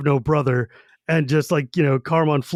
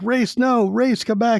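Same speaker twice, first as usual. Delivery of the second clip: high, screamed-out cry; 7 semitones higher than usual. Retelling a dream scene from the book: imitating a scream. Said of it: "he wakes up and he screams out and he's like".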